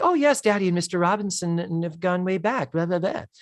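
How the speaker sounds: high, bad, affected male-model voice. Retelling a TV scene, voicing the character Kimberly: Kimberly voice, bit Zoolander. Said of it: "I always feel like I'm going a little bit into Zoolander".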